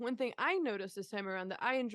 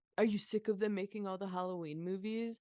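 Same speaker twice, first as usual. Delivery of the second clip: plain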